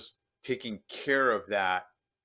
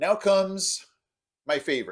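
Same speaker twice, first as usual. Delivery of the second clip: thick, very sarcastic, pitched-up delivery; 7 semitones higher, 4 dB louder than usual. Introducing yellow jackets as the next item on the list: sarcastic. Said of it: "I'm being very sarcastic".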